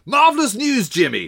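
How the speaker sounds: very high, loud, exclaimed shout. A narrator reads a man shouting good news to Jimmy. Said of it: "he shouted".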